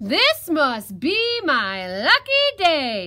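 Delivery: booming, loud, very slowly drawn-out shout. Having grabbed a piglet who knocked at his door, the fox shouts. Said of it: "the fox shouted".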